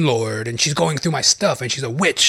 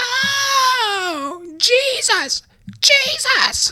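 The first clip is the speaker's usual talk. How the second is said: mock very high crying wail, drawn-out "oh". Retelling a congregation member who suddenly starts up, imitating someone wailing. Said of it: "she starts wailing".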